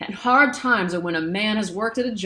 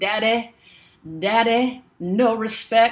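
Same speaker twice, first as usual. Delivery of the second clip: very slow, drawn-out, stretched "daddy"; 3 semitones higher than usual. Showing how Dusty Rhodes says daddy: imitating Dusty Rhodes saying daddy. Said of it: "he says it like this".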